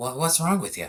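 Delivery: put-on strong Boston accent, pitched high. Retelling snapping at someone who tripped them: strong Boston accent. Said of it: "in the most Boston accent".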